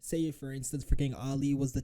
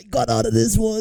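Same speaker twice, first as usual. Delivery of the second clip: higher, gleeful, gloating mock voice. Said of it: "He was like".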